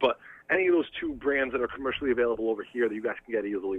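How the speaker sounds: normal talking voice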